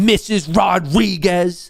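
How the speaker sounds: slow, accusing tone.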